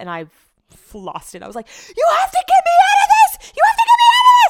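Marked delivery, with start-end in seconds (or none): 2.0-4.5 put-on very high, very loud, shrill, frantic panicked pleading. Retelling being stuck and screaming for help to get out, acting out a panicked plea. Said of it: "I was full blown having a panic attack".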